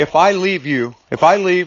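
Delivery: normal talking voice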